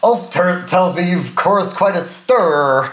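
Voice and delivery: put-on, loose, vaguely American accent. Quoting what a character says, in a kind of American accent. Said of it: "Where's that accent?".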